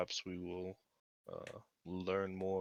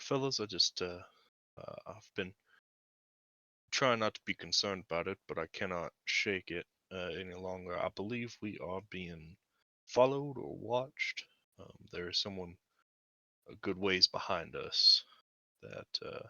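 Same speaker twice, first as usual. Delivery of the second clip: discreet, confiding aside; 5 dB louder than usual. Warning the fellas in character that they are being followed: speaking under one's breath. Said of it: "just under my breath".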